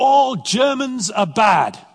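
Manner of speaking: very high, drawn-out, shouting pulpit preacher voice. Retelling what a visiting preacher shouted from the pulpit: imitating a preacher shouting. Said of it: "she shouted out".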